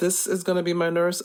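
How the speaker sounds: normal talking voice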